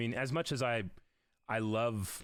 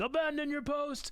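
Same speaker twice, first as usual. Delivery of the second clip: mock shrill, very high-pitched screaming. Retelling a film scene where Denethor screams at the people of Gondor: Denethor screaming. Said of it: "Denethor is screaming at the people of Gondor".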